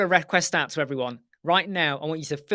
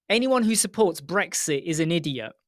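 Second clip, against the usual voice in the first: normal talking voice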